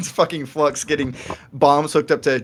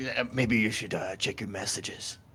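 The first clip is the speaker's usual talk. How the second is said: very quiet, clumsy attempted stage whisper, half-whispered; 5 semitones lower, 11 dB quieter than usual. A character tries to half-whisper to another player, an attempted half-whisper. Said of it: "He kind he whispers his best, but his voice isn't made for whispering".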